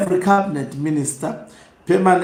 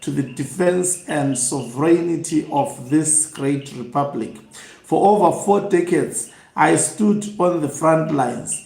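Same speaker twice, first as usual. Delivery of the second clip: ordinary talk, nothing marked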